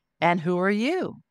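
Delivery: light, sing-song lilt running through the voice. Retelling asking a presence over the left shoulder who it was: lilting voice. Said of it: "literally with a lilt in my voice".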